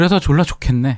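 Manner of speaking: high-pitched, sarcastic, mocking tone. Retelling how a mother spoke to her child leaving for college, mock-sarcastic retelling. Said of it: "이렇게 비꼬듯이 얘기하죠".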